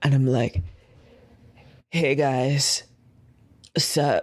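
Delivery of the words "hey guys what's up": smooth, slow, suave character voice. Playing a character walking up to two prep guards: smooth, slow in-character delivery. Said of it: "I walk up to them real slow and real smooth".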